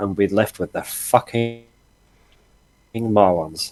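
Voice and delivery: slow, grumbled mutter under the breath. Voicing a character walking slowly up behind two others: muttered under breath. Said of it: "under my breath".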